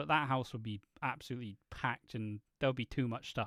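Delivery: normal talking voice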